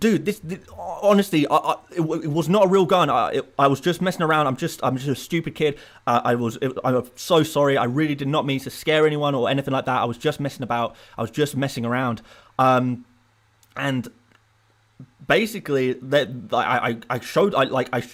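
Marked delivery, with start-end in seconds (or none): none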